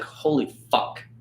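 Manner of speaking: breathy, whispered mutter under the breath. Recalling first seeing her at work, imitating a mutter under breath. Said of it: "literally muttered under my breath".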